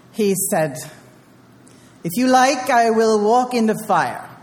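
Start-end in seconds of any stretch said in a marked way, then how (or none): 2.0-4.2 put-on Surinamese accent. Retelling a story, quoting what Andre said to the group, imitating Andre's Surinamese accent. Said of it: "I don't do a very good Suriname accent".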